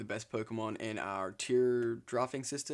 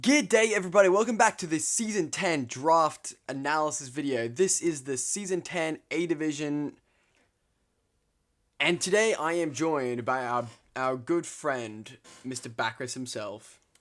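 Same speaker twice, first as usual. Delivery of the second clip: loud, full-energy, high-energy delivery; 5 semitones higher, 8 dB louder than usual. Host welcoming viewers back and introducing a guest on a draft analysis video, high-energy intro. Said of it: "Wow, so much energy".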